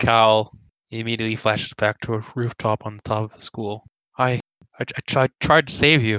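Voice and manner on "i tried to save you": stammering, slower speech. Cal, flashing back to a school rooftop, answers the familiar face: stammering. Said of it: "He, like, stammers out".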